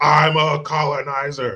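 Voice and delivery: loud, taunting yell. Retelling what a driver yelled out his window: imitating someone yelling. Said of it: "That's what he was yelling".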